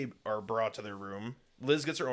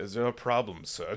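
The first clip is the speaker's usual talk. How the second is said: put-on nonchalant butler voice. Retelling a film scene where a butler runs into Hellboy, imitating a nonchalant butler. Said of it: "Just like nonchalantly".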